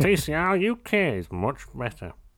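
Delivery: mocking, high, swooping drawl, very slow. Mocking what forum posters say about the series: imitating forum commenters. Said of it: "seem to overlook that completely and go".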